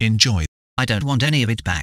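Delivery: put-on highbrow English accent, imitated posh speech. Quoting a visitor who hands over a bag of bottles; highbrow English accent. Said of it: "Imagine this highbrow English accent".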